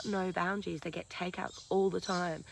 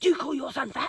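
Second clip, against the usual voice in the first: very loud, high, pointed accusing tone; 7 semitones higher, 9 dB louder than usual. Retelling what the child safety lady asked on the phone: imitating an accusing tone. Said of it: "really accusationally".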